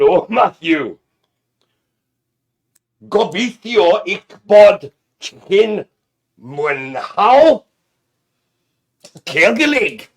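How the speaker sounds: loud, put-on Welsh accent, made-up speech. Speaker greets Matthew, showing off a practised accent; mock Welsh accent. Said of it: "So that is Welsh".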